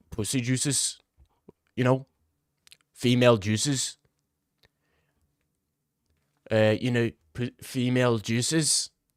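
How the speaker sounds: put-on Scottish accent, halting, with repeated words. Quoting what Paul Craig said about the beard: Paul Craig impression. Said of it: "that's a banger Scottish accent right there".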